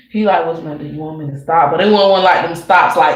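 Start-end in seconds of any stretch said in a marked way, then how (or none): 0.4-1.7 put-on deep voice, lower and quieter. Retelling how he asked with that deep voice: imitating a deep voice. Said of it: "that deep voice".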